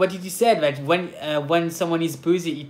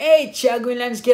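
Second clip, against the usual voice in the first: loud, high-pitched yelling; 7 semitones higher, 5 dB louder than usual. Retelling people calling out as the speaker leaves the house: imitating people screaming. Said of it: "there's people screaming like".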